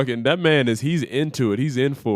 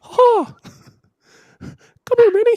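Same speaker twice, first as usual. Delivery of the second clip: very high, raised cartoon mouse voice; 7 dB louder than usual. Showing a reluctant listener one of your many voices, call to Minnie in a Mickey Mouse voice. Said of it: "I can do Mickey Mouse's voice too".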